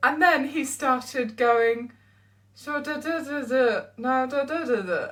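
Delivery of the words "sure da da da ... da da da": talking like a ventriloquist. Retelling how he talked while being lip-read: imitating Will's ventriloquism talking. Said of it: "it's like ventriloquism talking".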